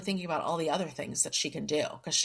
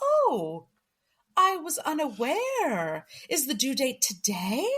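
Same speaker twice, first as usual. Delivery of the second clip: very slow, higher, stretched out, savoring every word; 7 semitones higher than usual. Retelling a character stalling people sent to evict her: imitating someone milking the moment. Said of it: "She really stretches it out".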